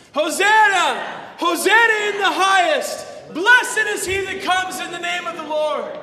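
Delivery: loud, high, joyful jubilant shout.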